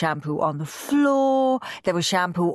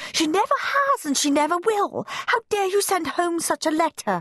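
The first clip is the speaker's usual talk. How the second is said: shrill, very high, indignant, outraged shriek; 11 semitones higher than usual. A mother bursts into the classroom with other parents, shrieking. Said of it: "shrieked Moody Margaret's mother".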